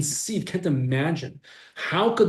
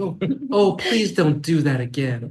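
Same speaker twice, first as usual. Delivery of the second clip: mock-gentle parent voice, much slower; 3 dB louder than usual. Acting out the suggested better approach, a parent to a child, mock-gentle parent voice. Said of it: "gently massage the back of the child".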